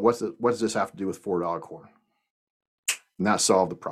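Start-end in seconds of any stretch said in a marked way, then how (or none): none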